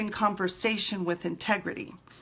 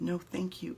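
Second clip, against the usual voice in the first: sugary-sweet, polite, sweetest possible voice; 3 semitones lower, 8 dB quieter than usual. Retelling turning down an offered kiss while still upset: imitating the sweetest voice. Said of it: "in the sweetest voice possible".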